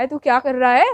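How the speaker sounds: loud, harsh, stern Haryanvi-style accent. Showing how Haryanvi speakers sound when talking: harsh Haryanvi-style tone. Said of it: "हरियाणवी में बोलते किस तरह उसका मतलब टोन ही अजीब होता है".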